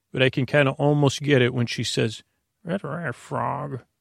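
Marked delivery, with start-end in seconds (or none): 2.6-3.7 rough, creaky put-on storytelling voice. Showing what a bedtime voice sounds like: bedtime Miss Piggy voice. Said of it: "bedtime Miss Piggy voice".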